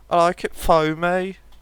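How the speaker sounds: very slow, stretched-out Brummie accent. Telling a coffee joke, giving the punchline in a Birmingham accent. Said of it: "there's certain British accents that would say it this way".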